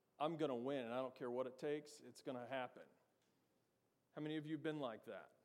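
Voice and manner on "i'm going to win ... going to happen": put-on arrogant, swaggering, cocky teenage boasting voice. Recalling being cocky at sixteen, imitating own arrogant teenage self. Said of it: "an arrogant sixteen-year-old version of me going".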